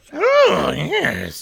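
very high, rough, creaky goblin grumble. Doing the voice the two speakers always do: put-on grumbling freak voice. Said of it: "Just like a grumbling fucking freak".

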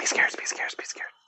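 whispering. Repeating a nonsense phrase again after being told to: whispering. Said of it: "No, whisper it".

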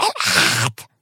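shouting quietly, deep and low. The narrator has searched the library for someone without finding him, and the words are shouted quietly. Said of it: "צעקתי בשקט".

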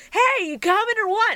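very high-pitched anime hero style voice. Retelling a line heard from an extra kid in the dub: Goku voice. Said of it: "he's just doing the Goku voice".

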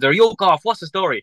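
mock high shout. Recalling the first stage, the speaker retells shouting to Danny, retelling a shout. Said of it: "I shouted to Danny".

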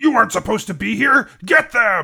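shrill, very loud lizard creature yell. Narrating a game, voicing a lizard folk enemy spotting the party, lizard folk yelling. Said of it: "lizard folk yells".

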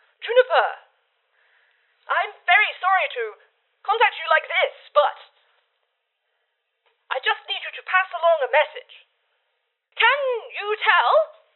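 high, fast, apologetic recorded message voice.

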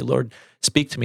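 ordinary talk, nothing marked

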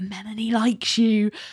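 put-on whisper. Retelling a show scene where a character tells a coworker a secret: imitating a whisper. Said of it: "whispering to him".

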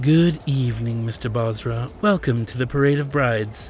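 light, tinkling, sensual tone. Reading a siren's greeting to arriving guests, in a tinkling, sensual voice. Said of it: "she greeted them in a tinkling, sensual voice".

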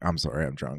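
teary voice, on the edge of crying. Retelling a film scene where the character apologizes: imitating Michael Peña almost crying. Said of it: "kinda almost crying".

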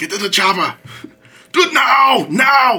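pitched very high, every word dragged out. Showing a once-better Arnold Schwarzenegger impersonation. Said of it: "doing an Arnold Schwarzenegger impersonation".

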